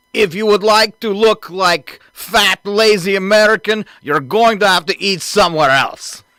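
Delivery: put-on Russian accent. Joking about McDonald's and Starbucks closing stores in Russia: Russian accent. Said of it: "You do a pretty good Russian accent".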